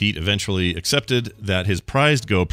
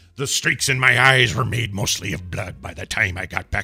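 put-on salty sailor voice; 3 semitones higher than usual. Imitating a sea salty lighthouse keeper voice: Willem Dafoe sea salty voice. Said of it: "Willem Dafoe's voice".

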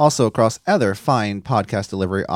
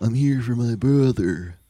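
slow wrestler voice, every word drawn out. Joking about the Undertaker sneaking in ballots: Undertaker impersonation. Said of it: "Is that an Undertaker impersonation?".

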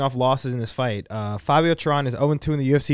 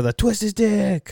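put-on drunk man screaming, high-pitched; 7 semitones higher than usual. Retelling what a drunk man behind him at a fight shouted, retelling his screaming. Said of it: "He was screaming".

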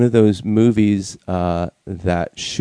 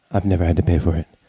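put-on seductive vixen voice, much lower pitch; 4 semitones lower than usual. Joking with the others, a sexy vixen voice. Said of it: "You went like a sexy vixen voice there".

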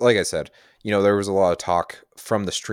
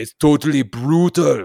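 high, loud, booming, bad action-hero accent. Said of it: "my best Arnold, Arnold Schwarzenegger voice".

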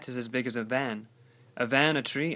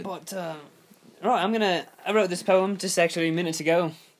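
put-on British accent, pitched up; 5 semitones higher, 3 dB louder than usual. Introducing a poem just written, in a put-on British accent. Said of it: "in a British accent".

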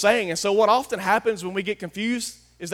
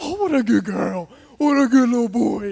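put-on cooing, baby-talk voice used for a pet; 4 semitones higher, 5 dB louder than usual. Contrasting Jesus with a dog owner, imitating her baby-talk dog voice. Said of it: "he's not going to get his dog voice out".

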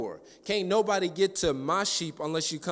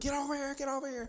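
put-on screamed call, pitched very high; 10 semitones higher, 7 dB quieter than usual. Retelling a caller screaming for her to come over: retelling someone screaming. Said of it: "She's screaming".

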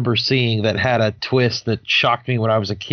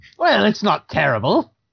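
deliberate, affected put-on voice, high and slow; 7 semitones higher than usual. Trying a voice after being told to attempt it: Joker impression. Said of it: "I bet you could do a Joker impression".

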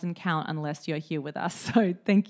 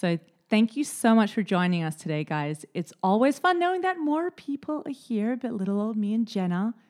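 fake American accent, pitched up; 5 semitones higher than usual. Reading the next bit of a script in a put-on american accent. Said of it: "How am I going so far?".

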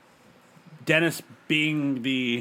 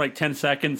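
plain

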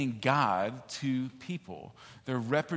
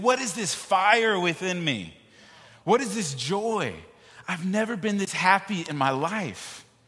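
mock ecstatic, drawn-out, joyful screaming; 6 semitones higher, 5 dB louder than usual. Retelling praying for Kostas, speaker acts out Kostas afterward: imitating someone screaming. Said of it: "and he's screaming".

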